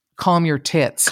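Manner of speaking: usual speaking voice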